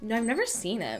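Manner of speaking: put-on, as bitchy as possible, dismissive tone. Retelling Phoebe answering his question, imitating Phoebe, mock-bitchy. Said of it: "literally as bitchy as possible".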